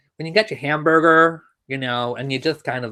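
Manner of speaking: attempted American accent. Asked to do an American accent again, the speaker tries one: attempted American accent. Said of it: "Would I please do an American accent again?".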